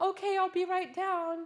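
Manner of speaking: eager answering tone, high pitched and loud. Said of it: "And you're like".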